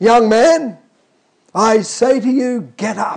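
very slow, commanding godlike voice, full authority. Addressing the church, retelling Jesus speaking to a young man, in Jesus's godlike voice. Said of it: "He said in his godlike voice, a voice of power and authority".

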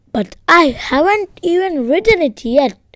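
squeaky, high, loud little squeak. A mouse narrator answering his young assistant editor, squeaked. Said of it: "I squeaked".

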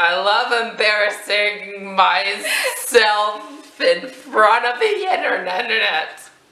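cracking voice, very drawn out. Joking with a sibling at the start of a video, voice cracking. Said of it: "Your voice cracked".

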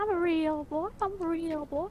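high, lifted cartoon puppet voice. Correcting another speaker about how Mystic sounds, doing a Pinocchio from Shrek voice. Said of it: "it was more Pinocchio from Shrek".

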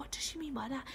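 very quiet, hushed whisper. Retelling what was whispered during an argument: imitating Claire whispering. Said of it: "whispering to me".

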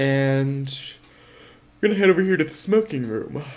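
speaking through a yawn. Giving a walkthrough of the decks and staircases, yawning while talking. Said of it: "sorry, I just yawned".

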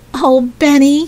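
exclaiming. Narrator reads a girl calling out to a boy at a dump, cried out. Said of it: "cried Jessie".

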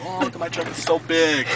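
plain

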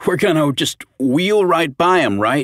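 sardonic, needling, sarcastic, high voice. [name] speaks to his brother Peter at the loaded gardening cart, sarcastic. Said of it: "[name] remarked sarcastically".

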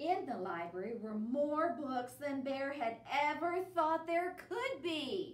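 plain

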